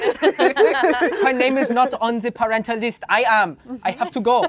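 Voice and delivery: put-on German accent. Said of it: "the German kindergarten bit".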